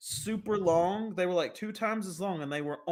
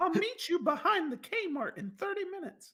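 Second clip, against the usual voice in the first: silly squeaky put-on voice, very high-pitched; 12 semitones higher than usual. Speaker acts out answering a stranger's call, really high-pitched voice. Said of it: "talking in a really high pitched voice".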